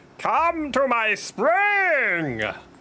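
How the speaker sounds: very high, goofy ghostly spirit voice, stretched. Voicing a spirit in a game, spirit character voice. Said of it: "This is the voice for the spirit".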